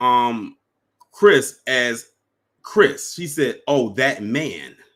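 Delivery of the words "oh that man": mock, put-on dismissive tone. Retelling what she said about her friend: imitating a dismissive tone. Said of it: "dismissive tone too".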